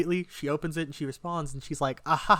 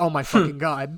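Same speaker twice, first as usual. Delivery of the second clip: put-on panicked voice, louder; 4 dB louder than usual. Retelling the moment she added him back: imitating his own panic. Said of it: "I'm panicking".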